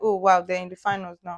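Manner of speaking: plain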